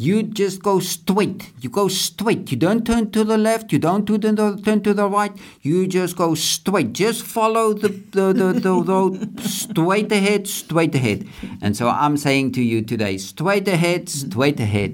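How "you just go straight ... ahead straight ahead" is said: put-on New York accent, much higher pitched. Retelling what a security guard said when asked where to go, New York accent impression. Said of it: "I don't know whether I'll be able to mimic him".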